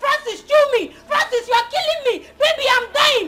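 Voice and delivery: mock distressed screaming. Someone acting out what their auntie is screaming, imitating auntie screaming in distress. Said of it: "My auntie is screaming!".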